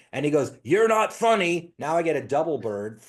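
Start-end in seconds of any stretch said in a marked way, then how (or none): 0.6-1.7 loud, raised, furious, angry tone. Retelling what a pissed off guy said after standing up: imitating an angry man. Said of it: "he is angry".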